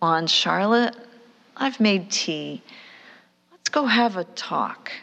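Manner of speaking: play-acted, open, inviting and welcoming voice. Retelling knocking on her door to call her to tea, in an invitational voice. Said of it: "more invitational voice".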